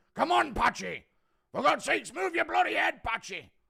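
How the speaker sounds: hoarse, rough scream, very high, loud and booming. A quick impression bit: John Fury impression screaming. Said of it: "Impression of John Fury screaming at Patchy Mix".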